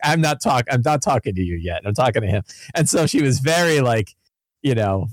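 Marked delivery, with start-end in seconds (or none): none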